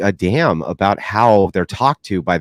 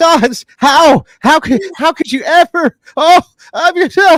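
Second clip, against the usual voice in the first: very high, loud, scandalised, aghast sputtering stammer; 6 dB louder than usual. Imitating how women react to blunt criticism: imitating someone aghast. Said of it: "they're aghast".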